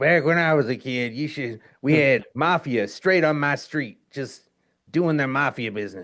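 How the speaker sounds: put-on Chicago guy accent. Imitating those guys from Chicago who eat deep dish pizza: Chicago guy accent. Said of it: "You know those guys from Chicago who".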